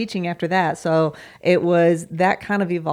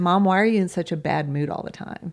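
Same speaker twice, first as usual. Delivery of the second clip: quick, mock guileless, innocent voice. A mother retells a question her daughter asked her; imitating an innocent voice. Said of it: "said to me in an innocent voice".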